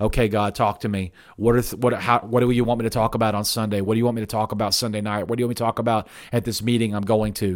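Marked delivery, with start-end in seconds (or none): none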